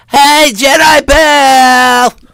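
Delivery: very high put-on comic voice with a stretched-out word. Trying a greeting in the Abbott and Costello voice. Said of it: "in the Abbott Costello voice".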